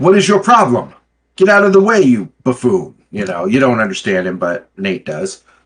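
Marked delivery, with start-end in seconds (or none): 0.0-2.9 high-pitched, hard, irate angry yell. Voicing a crewman who was bumped into: yelling back in character. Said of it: "he's yelling back at you".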